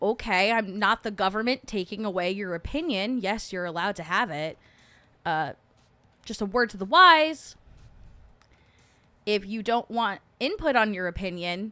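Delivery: ordinary delivery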